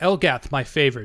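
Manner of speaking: resonant goddess voice. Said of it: "you hear her voice kind of ring out".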